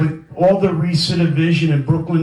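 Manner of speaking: normal talking voice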